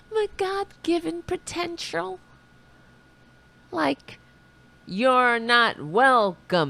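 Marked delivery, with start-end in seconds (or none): 0.1-2.2 fake sincerity, giggling, quieter. Mocking a speech line, pointing out the giggle: mock-sincere with a little giggle. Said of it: "Do you hear the little giggle in my voice?".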